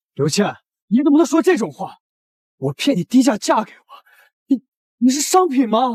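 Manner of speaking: shouting. Objecting to an accusation of tricking someone into a cheap marriage: shouting. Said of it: "你喊什么喊呀？".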